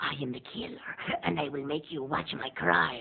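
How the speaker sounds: soft, whispery horror-film killer voice. Describing Italian horror films, speaker voices the gloved killer in a whispery Giallo killer voice. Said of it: "he always has this whispery voice".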